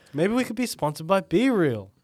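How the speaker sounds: high-pitched cartoonish character voice. Suggesting a sponsor to another speaker, sounding like a cartoon character. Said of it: "Why did I sound like a cartoon character?".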